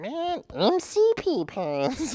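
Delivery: very high, slow, swooping cartoon voice. Retelling what was done with friends in college: Meatwad voice. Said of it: "I would do the Meatwad voice".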